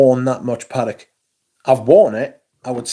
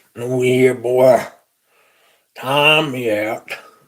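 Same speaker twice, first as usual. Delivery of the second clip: put-on old-time frontier Texas cowboy voice. Imitating a woman who asked to be timed out, in an old Texas cowboy voice. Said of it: "Sounds like a cowboy from Texas in eighteen seventy-three".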